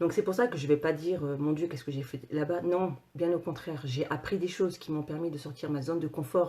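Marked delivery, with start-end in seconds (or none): none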